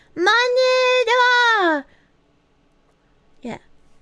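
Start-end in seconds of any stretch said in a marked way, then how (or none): 0.2-1.9 stretched-out, high-pitched, cutesy uwu voice. Trying to say monitor in an uwu voice, slow drawn-out uwu-voice monitor. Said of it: "I'd have to go really slow".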